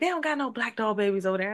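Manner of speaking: high, hushed half-whisper. Retelling what their mom said while shopping at Walmart, half-whispered. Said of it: "and she whispered it".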